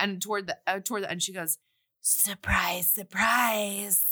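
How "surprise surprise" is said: raspy whisper. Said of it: "like, raspy voice".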